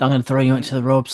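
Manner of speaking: acted whispering. Retelling what wrestlers say during a lock-up: imitating a wrestler whispering. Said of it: "they're whispering to each other".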